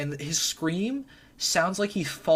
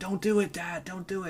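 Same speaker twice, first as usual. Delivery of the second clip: mock, soft, begging, pleading tone; 2 semitones higher, 5 dB quieter than usual. Retelling a movie scene, imitating the daughter pleading with her dad. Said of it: "and she's pleading".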